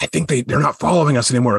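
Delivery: put-on character whisper. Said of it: "Are you whispering or are you yelling at me?".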